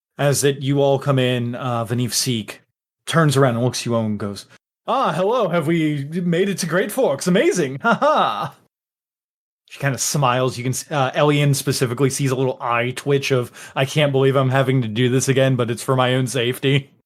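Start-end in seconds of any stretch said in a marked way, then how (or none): 4.9-8.6 high, affected, foppish dandy gentleman voice. Narrating a scene, voicing Vanif Seek greeting the arriving group, Vanif Seek foppish gentleman voice. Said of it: "weird foppish like gentleman investigator".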